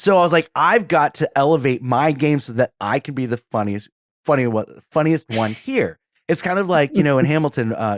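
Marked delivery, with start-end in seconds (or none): none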